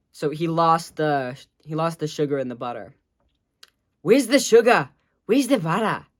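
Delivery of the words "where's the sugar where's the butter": fast, rattled-off put-on Australian accent. Doing an impression of an Australian guy making cookies: Australian accent impression. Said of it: "my impression of an Australian guy".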